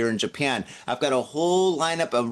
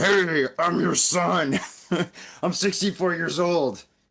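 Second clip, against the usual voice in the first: slow, scratchy, scruffy, rough put-on voice; 4 semitones higher than usual. Retelling a sixteen-year-old kid phoning an elderly lady, in a scruffy voice. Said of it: "called this lady with like a scruffy voice".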